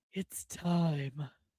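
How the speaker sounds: put-on big deep voice, drawn out long. Announcing it's time to talk about Supergirl, deep voice. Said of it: "That was my deep voice".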